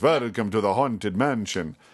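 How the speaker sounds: put-on Hungarian-accented voice. Showing how the haunted mansion greeting could have sounded: Bela Lugosi voice. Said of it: "the Hungarian Bela Lugosi voice".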